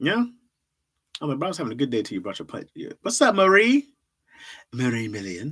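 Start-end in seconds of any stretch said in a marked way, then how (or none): 4.7-5.5 bad, put-on French accent. Trying out an accent on a name: bad french accent. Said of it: "That was my French accent".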